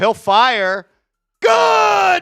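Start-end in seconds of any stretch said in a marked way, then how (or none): 1.4-2.2 full-throated, high, drawn-out, sportscaster-style yelling. Calling a basketball game live, describing a made shot: yelling. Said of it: "I ain't gonna stop yelling".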